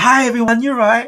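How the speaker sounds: perky, chirpy, loud, very high voice. Retelling greeting colleagues at a morning meeting after drinking: imitating own chirpy greeting. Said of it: "you're really chirpy this morning".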